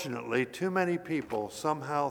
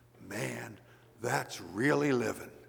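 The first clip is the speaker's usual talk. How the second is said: put-on awed whisper; 3 semitones lower than usual. Retelling a bystander watching a Cadillac lowered into a hole, imitating an awed whisper. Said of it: "whispered in an awed voice".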